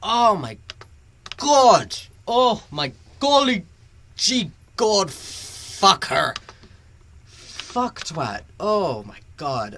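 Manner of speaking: loud, swooping, furious angry outburst. Streamer ranting live about a series' wrong opening, very angry. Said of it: "I'm being very angry right now".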